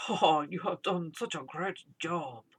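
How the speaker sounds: awful, badly done put-on Japanese accent. Quoting what a man said to him, awful japanese accent. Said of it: "such a awful Japanese accent".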